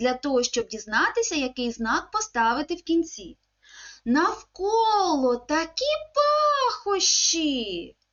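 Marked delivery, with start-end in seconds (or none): 4.1-7.8 excited, exclamatory intonation. Reading an example sentence to children so they pick the end mark: exclamatory intonation. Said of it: "зверніть увагу на інтонацію, з якою я читаю це речення ... Це речення окличне".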